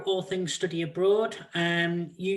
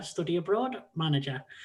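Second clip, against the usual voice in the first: normal talking voice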